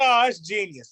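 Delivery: ordinary delivery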